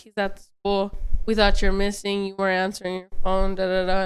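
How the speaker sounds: ordinary delivery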